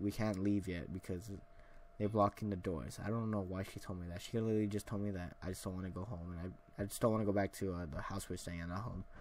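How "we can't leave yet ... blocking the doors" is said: ordinary talk, nothing marked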